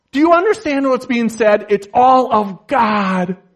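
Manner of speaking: heated, worked-up, loud, fast preaching delivery. Between prayers, a speaker asks the listeners a question, excited. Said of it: "I'm getting a little lathered up here".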